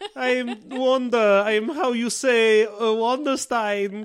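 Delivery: put-on Eastern European accent. Discussing a character who lost her accent, speaker mimics her: Wanda's Eastern European accent. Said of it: "vaguely Eastern European accent".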